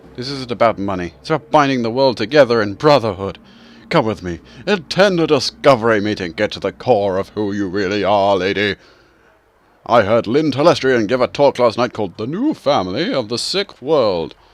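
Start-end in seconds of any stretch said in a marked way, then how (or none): 0.2-8.8 fervent, zealous voice, louder. A convert tugs at a woman's arm as she turns away: zealous convert. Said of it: "She has to turn away when a man with the face of a survivor and zeal convert tugs at her arm. / She has to turn away when a man with the face of a survivor and zeal convert tugs at her arm. It's clear".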